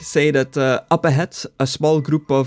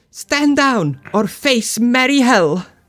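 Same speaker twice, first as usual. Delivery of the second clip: put-on high, slow childlike voice, calling out; 8 semitones higher than usual. Game narrator voicing a call from a tree house to the players, in a childlike voice. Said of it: "a childlike voice like echoes from the tree".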